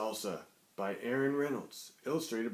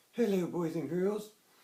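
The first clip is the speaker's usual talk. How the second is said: put-on grandmother puppet voice. Voicing a Granny puppet who greets the host at story time: Granny character voice. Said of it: "hey, Granny".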